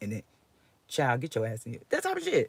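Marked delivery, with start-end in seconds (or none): none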